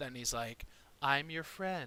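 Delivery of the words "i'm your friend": soft, brought-down voice. Retelling a man who switches from a loud voice to a softened, lowered voice. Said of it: "softens and brings his voice down".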